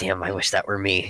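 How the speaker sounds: muttering under breath. Voicing a character staring at a floating book, saying under his breath. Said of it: "is just kind of saying under his breath".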